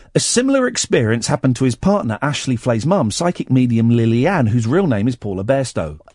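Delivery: normal talking voice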